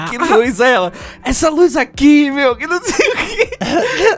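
put-on stoned-sounding shout. Telling a friend what the speaker shouted in a room, retelling shouting while high. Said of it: "altão gritando".

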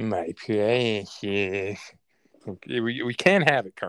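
very slow, drawn-out whining creature voice. Joking that a man has a voice in his head, doing a Gollum voice. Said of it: "the guy's got Gollum up there in his head".

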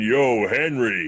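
put-on big, loud American voice and accent. Speaker retells a tall stranger greeting him by name, big American voice. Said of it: "this big American voice went".

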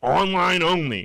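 mock hollered, loud, high-pitched yell. Retelling stepping into a shop line, imitating a guy yelling. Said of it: "Dude just yells at me like".

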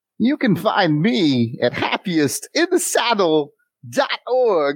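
very slow, drawn-out delivery. Giving a social media handle as a joke: Christopher Walken impression. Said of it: "That was me doing a Christopher Walken impression".

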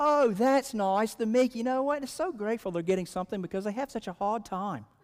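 put-on British accent. Speaker retells a woman's reply to the man in front of her, British accent. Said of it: "I have to say it with a British accent".

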